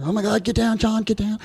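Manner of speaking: play-acted, frantic, panicked shrieking, very high-pitched. Recalling young soldiers in a convoy screaming at each other, imitating screaming. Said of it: "They start screaming at each other".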